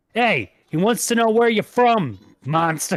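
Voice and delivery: loud, high-pitched screaming shout, directed upward. Playing a character who screams up to a monster: screaming in character. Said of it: "scream up to it".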